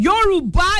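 Yoruba stressed emphatically, like meaning it. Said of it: "Say it like you mean it".

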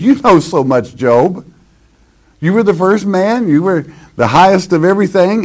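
sarcastic mock praise. Acting out a speaker mocking Job: sarcastic, acted out. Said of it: "it's in a sarcastic way".

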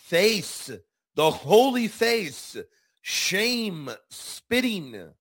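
"face", "holy face", "shame", "spitting" lifted high and slow. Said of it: "Let me emphasize the language again".

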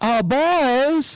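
put-on high southern twang, "boys" drawn out. Retelling a movie scene, quoting Gene Wilder's character: Gene Wilder's southern accent. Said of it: "like in a southern accent".

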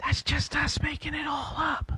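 secretive whisper, pitched very high. Explaining the game's third answer option, really fake news: whispering. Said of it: "why'd you have to whisper that?".

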